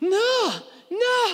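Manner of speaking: play-acted, very high, drawn-out crying and bawling. Retelling how he refused the offered bite, imitating his bawling. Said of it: "and just bawling".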